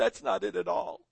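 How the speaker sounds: mock choked-up voice catching on swallowed tears. Telling a joke, acting out the husband answering his wife, choking back tears. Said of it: "As he chokes back the tears".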